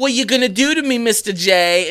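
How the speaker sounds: put-on Brooklyn accent. Quoting a character's line to show where her accent came through: imitating a Brooklyn accent. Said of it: "you heard it come out then".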